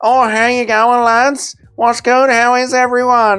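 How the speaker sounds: put-on northern Australian accent blended with Scottish. Mocking her accent to a mate, use a put-on north aussie accent mixed with scottish. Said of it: "And then you put Scottish in there as well".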